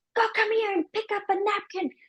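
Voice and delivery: put-on high shout. Retelling a mom calling her child across the room: imitating someone shouting. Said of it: "And then I'm shouting across the".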